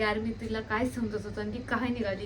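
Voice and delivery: ordinary talk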